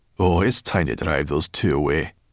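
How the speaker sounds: plain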